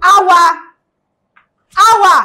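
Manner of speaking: loud, high shout, calling out. Calling the other wife by name in a skit: shouting a name. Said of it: "Pourquoi tu cries mon nom comme ça ?".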